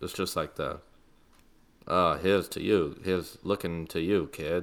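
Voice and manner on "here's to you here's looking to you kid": flat monotone, no inflection at all, dead level. Speaker imitates the way those guys all talk, flat, zero-inflection delivery. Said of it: "zero inflection in their voice".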